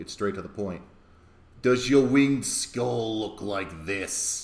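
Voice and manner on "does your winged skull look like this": loud, slow, thick, menacing, sinister rasp. Reading a character's line in a story, thick, sinister rasp. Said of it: "He rasps".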